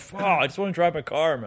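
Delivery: put-on angry, mad swearing outburst. Retelling how Nick reacted about his car, imitating Nick sounding mad. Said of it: "Nick is so mad".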